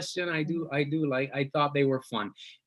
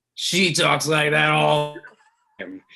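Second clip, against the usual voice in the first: usual speaking voice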